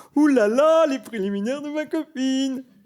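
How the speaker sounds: mock aroused voice, very high, loud, and slow.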